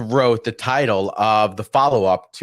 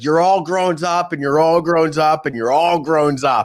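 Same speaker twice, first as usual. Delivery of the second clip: put-on drunken yell, higher pitched; 5 semitones higher than usual. Retelling a movie scene of standing on a diner table: imitating Vince Vaughn yelling. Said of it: "yelling at Jon Favreau character".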